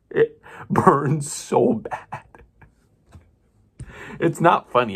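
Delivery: very slow, drawn-out, high-pitched talking through laughter. Describing a burning pain in the eyes: laughing while talking. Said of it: "I don't know why I'm laughing".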